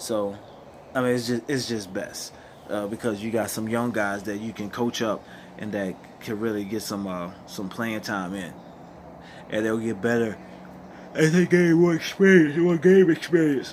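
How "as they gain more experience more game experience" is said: very loud, pitched-up speech, yawning mid-sentence. Speaker addressing y'all just before taking a nap, yawning while talking. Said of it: "Sorry, y'all, I'm yawning".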